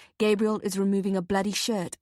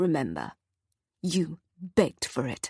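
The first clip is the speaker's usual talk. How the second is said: low, menacing, threatening voice; 4 semitones lower than usual. He releases the narrator with a shove and warns in a quiet, threatening voice. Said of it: "says in a quiet, threatening voice".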